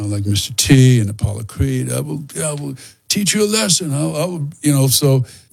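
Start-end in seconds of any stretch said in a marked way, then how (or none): 1.9-4.5 loud movie villain voice, higher. Showing how Rocky villains talk: loud Rocky villain voice. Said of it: "they're very loud".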